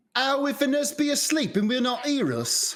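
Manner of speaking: put-on very high London Cockney accent. In a staged scene, a character asks a worried question in a Cockney accent. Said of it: "The fucking Cockney accent".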